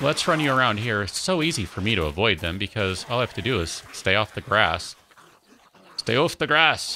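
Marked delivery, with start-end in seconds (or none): 6.0-7.0 bad Scottish accent, pitched up. While steering characters away from mines, quoting a line in a bad Groundskeeper Willie accent. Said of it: "My Willy is not particularly good accent".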